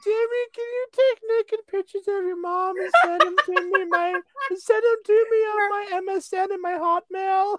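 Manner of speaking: very high-pitched cartoon kid voice. Talking to Jimmy in a comedy bit, Carl impersonation. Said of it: "This is my first time doing a Carl impersonation".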